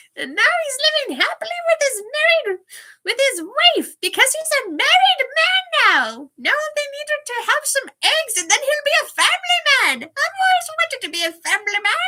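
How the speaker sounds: loud, very high talking-crow voice. Showing Matt how the crow he gave him talks, crow voice. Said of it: "the crow talks like this".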